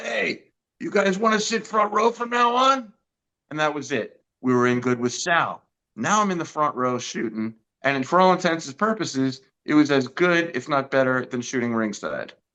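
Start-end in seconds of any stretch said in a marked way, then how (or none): 0.0-2.9 raspy, smoker-like voice, pitched very high. Retelling a voice from behind offering front row seats: imitating Sal's raspy voice. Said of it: "this raspy angel smoking a cigar".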